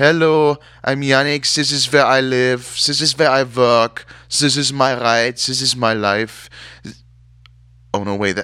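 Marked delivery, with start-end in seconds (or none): 0.0-6.5 put-on German accent, slow pace. The speaker voices Yannick introducing himself: German accent as Yannick. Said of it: "That was a German accent".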